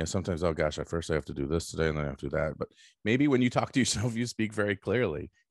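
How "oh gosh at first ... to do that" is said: mumbling, muttering, lower. Showing how people talk to themselves: muttering to oneself. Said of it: "most of you probably are muttering".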